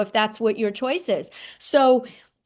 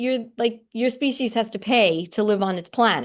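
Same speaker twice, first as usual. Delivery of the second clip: plain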